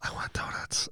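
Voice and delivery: hushed, soft, breathy whisper. Retelling own past words to a pregnant partner: imitating a whisper. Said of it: "I'd whisper".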